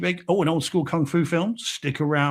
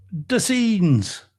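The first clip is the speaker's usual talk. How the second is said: brief put-on Irish accent; 3 semitones higher, 4 dB louder than usual. Finishing the podcast's opening line in a put-on accent. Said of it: "That's your accent?".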